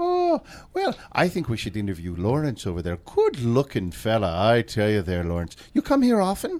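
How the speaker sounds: put-on leprechaun voice. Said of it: "How long can you keep that up?".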